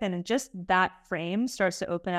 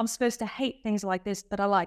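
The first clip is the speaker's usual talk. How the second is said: imitated British accent. Quoting british participants after a session: imitating a british accent. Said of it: "Good accent".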